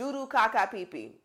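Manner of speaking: put-on shouting. Retelling a story, imitating their dad yelling from the car window. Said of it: "my dad rolls down the window and yells".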